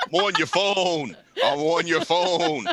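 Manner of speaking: very low, slow, dragging talking horse voice. Joking about a horse figure on a phone, voicing the horse. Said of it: "the horse like this".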